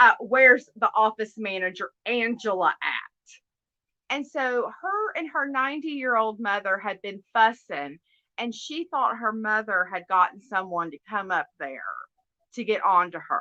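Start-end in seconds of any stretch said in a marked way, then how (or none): 0.2-2.9 mock-stern, put-on very stern voice. Retelling how the speaker kept asking for the office manager, retelling a very stern demand. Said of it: "in a very stern voice".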